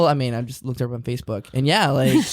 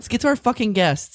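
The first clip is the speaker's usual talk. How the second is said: irritated, heated, pitched-up angry outburst; 8 semitones higher than usual. Speaker repeats Matt's words back to him, mock-angry. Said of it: "why are you so angry though?".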